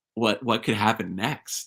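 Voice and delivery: ordinary talk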